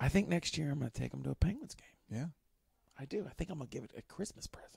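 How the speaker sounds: quiet, hushed half-whisper, kept soft. Talking about plans for their kids while the kids are in the room, half-whispering. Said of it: "I'm whispering because my kids are here".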